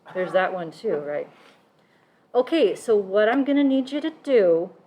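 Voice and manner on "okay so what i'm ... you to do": put-on motherly voice, high and raised. Speaker offers to redo the bit and switches to a mommy voice. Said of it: "do this in my mommy voice".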